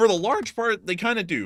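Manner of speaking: voice cracking mid-sentence, jumping high. Answering a question about a term, voice cracking. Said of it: "I have that voice crack right there".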